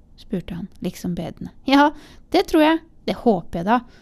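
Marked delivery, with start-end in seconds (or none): 1.7-3.8 cheery, upbeat, high and raised tone. Answering a visitor who asks if he has the right house, cheerful. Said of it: "svarte Bertha muntert".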